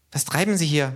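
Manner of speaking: hurried, excited, restrained, high rising pitch. The narrator reads k.'s question to the man ironing: hurried, excited, not loud. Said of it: "sich vor Aufregung überstürzend, aber nicht laut".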